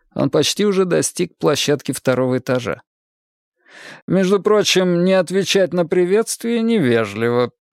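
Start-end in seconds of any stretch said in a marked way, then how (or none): 4.1-7.5 patronizing, condescending, mocking tone, pitched up. A man climbing the stairs remarks in a condescendingly mocking voice. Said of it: "голосом все таким же снисходительно насмешливым заметил".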